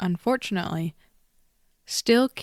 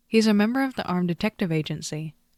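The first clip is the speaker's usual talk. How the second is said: plain reading voice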